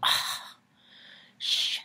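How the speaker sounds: play-acted, fed-up, totally annoyed, exasperated tone. Retelling Mom's reaction to being asked to close the door: imitating someone totally annoyed. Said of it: "like, totally annoyed".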